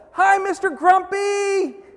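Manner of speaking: very loud, shrill yell carried across distance. Retelling waving at a neighbor across the street: retelling a yell. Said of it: "and I yelled".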